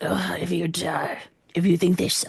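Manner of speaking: mock voice of a dying man, badly done. Repeating a dying man's exact words, the speaker imitates a dying man. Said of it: "That was my dying man voice".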